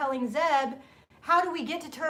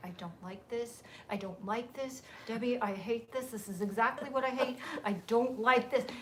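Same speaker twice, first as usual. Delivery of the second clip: hushed, furious, simmering, bottled-up anger; 3 semitones lower, 8 dB quieter than usual. Retelling a rushed trip when she was quiet and mad: imitating someone quiet and furious. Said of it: "and she's really quiet".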